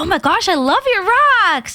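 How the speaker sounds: high, laid-on-thick gushing, fake-sounding enthusiasm. Retelling trying for a job by complimenting a rock collection, playing up mock gushing. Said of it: "I thought I was like playing it up".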